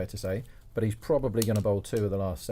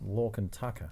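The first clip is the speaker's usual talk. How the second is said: Australian accent with the words rolled off; 5 dB quieter than usual. Asked to do an Aussie accent, speaker says a name in Aussie accent. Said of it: "it rolls off the tongue more in an Aussie accent".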